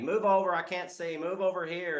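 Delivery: snide, needling, high, snarky tone. Retelling how a lawyer kept remarking during a trial: imitating snarky remarks. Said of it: "keeps kinda snarking at me".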